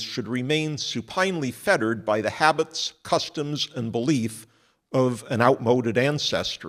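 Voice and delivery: ordinary talk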